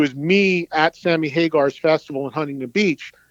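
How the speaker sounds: ordinary talk, nothing marked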